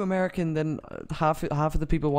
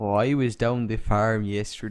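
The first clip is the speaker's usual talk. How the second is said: attempted put-on American accent; 6 semitones lower than usual. Asked by the other speaker for his best american accent, attempting an american accent. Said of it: "give me your best American accent".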